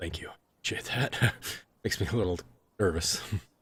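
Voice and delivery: soft, breathy whisper under the breath. A character thanks someone who offered protection, whispering. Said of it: "he kind of whispers".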